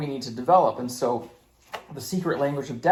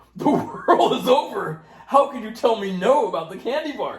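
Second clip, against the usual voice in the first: high, loud mock toddler wail of despair. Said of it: "And they're like".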